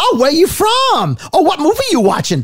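chatty, very high, sing-song Southern lady voice. Retelling a plane flight, imitating a chatty Southern woman: imitating a Southern woman. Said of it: "the Southern woman".

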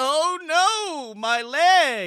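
very slow, high, loud, stretched-out, drawn-out scream. Retelling how the other speaker screamed while in danger: imitating someone screaming. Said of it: "you kept screaming at me like".

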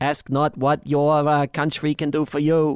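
bad, weak, unconvincing Boston accent. Showing the Boston accent they can manage: bad Boston accent. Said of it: "It's not good".

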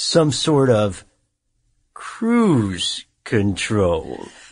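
hammed-up campy supervillain voice, swooping pitch. Telling how aggravated Ralph got an idea for controlling a car's speed, in a Dr. Evil impression. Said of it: "Dr. Evil impression, everybody".

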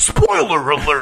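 big voice-guy announcer delivery. The speaker demos the spoiler-alert bumper they wanted, in a big voice-guy delivery. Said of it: "like a big voice guy".

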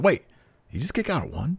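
subtle, very high-pitched, low-key concerned tone. Retelling a commentator's reaction to a kickout: imitating Taz's subtle concern. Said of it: "you hear this concern in his voice".

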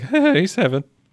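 mock stumbling, nervous, very high squeak with voice crack. Acting out a man who stumbles around a woman: mock-nervous, cracking voice. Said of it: "Just like that in that voice. He cracks".

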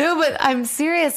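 talking while crying. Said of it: "crying out of nowhere now".

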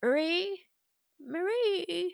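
feeble, very high, weak, drawn-out calling. In the darkness, a game narrator voices the missing librarian calling out: Mavis's weak voice calling out. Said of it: "a weak voice calls out".

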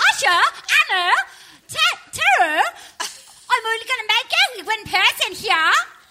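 put-on Australian accent. Showing the others an Australian accent, quoting the show: put-on Australian accent. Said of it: "That's me as an Australian".

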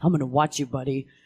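mock confrontational, suspicious and challenging tone. Retelling how the chief got in his face, imitating a confrontational police chief. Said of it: "he kinda got in his face and was like".

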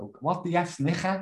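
imitated Scouse accent. Peter retells how his mum reacted to an invitation, imitating mum's Scouse accent. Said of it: "in a scout".

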